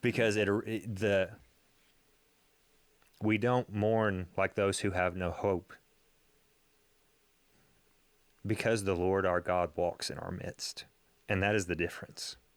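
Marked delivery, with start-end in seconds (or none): 0.0-10.8 touched, slightly moved, a little emotional voice. Reflecting on a Bible phrase that struck deeply, getting a little emotional. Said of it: "I'm getting a little emotional".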